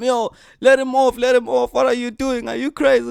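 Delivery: shrill, high-pitched, rowdy shouting. Telling a bus story, acting out friends backing up their mate, retelling friends shouting at driver. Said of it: "starts shouting at the driver".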